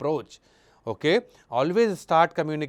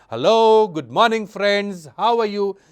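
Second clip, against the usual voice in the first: bright, energetic, raised, lively, pitched up; 5 semitones higher, 6 dB louder than usual. Showing how to vary tone, greets the audience with a raised, lively voice. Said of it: "See how I am raising my voice".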